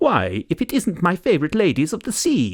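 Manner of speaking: jolly, effusive, beaming sing-song voice. A narrator voices the man at the tea blenders' door greeting visitors: beaming, jolly greeting. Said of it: "The door of the tea blenders was opened by a plump, jolly-faced man. / The door of the tea blenders was opened by a plump, jolly-faced man. He had wavy grey hair, a little moustache, and, given the pu".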